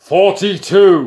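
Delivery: majestic and calm. Asked the great question at last, give the answer with infinite majesty and calm. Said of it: "with infinite majesty and calm".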